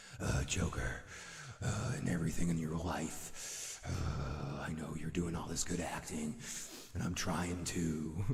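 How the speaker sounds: slow, breathy, drawn-out whisper, dark hero voice.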